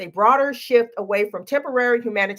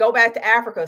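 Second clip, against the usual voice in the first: ordinary delivery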